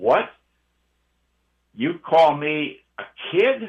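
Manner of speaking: extremely loud, booming stentorian bellow. Recalling your brother after lights out in the big room, retelling a stentorian, extremely loud voice. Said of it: "in a stentorian voice, extremely loud".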